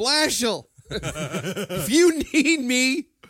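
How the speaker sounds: high, loud yell with laughter. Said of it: "Could you imagine yelling".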